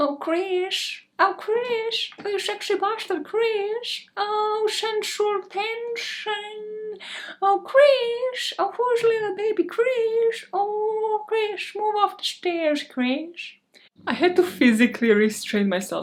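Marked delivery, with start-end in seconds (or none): 0.0-13.6 very high, slow, dragged-out pervert voice. Asked to do the Herbert voice, the speaker calls out to Krish: Herbert the Pervert voice. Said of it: "Do the Herbert the Pervert".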